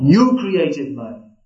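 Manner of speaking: mock firm, very strong, forceful, commanding tone. Quoting an answer given to a devotee's question, in a very strong voice. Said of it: "said in a very strong voice".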